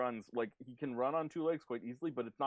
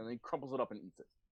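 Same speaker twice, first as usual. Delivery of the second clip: usual speaking voice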